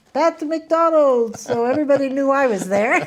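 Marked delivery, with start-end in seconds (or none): 0.1-1.3 very loud, thick, heavy put-on French accent, pitched up. Retelling a friend calling a name across a crowded ballroom: imitating loud heavy French accent. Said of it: "heavy, very loud, in French accent".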